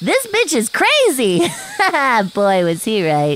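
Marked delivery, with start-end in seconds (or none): 0.0-1.4 high yelling outburst. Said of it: "he started yelling".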